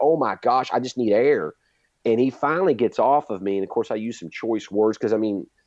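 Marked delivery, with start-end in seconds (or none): 0.0-1.5 put-on panicked screaming. Retelling screaming at the training partner for air: imitating screaming. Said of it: "I start screaming at him".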